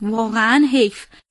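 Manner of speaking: ordinary delivery, nothing marked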